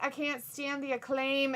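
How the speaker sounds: ordinary delivery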